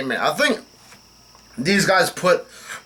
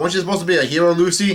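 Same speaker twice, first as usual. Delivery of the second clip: plain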